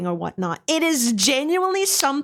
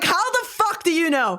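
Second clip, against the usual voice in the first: startled, spooked, alarmed, freaked-out outburst; 6 semitones higher than usual. Retelling how you reacted when someone knew your secret: imitating own freaked-out reaction. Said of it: "I freaked the fuck out".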